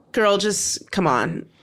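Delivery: ordinary delivery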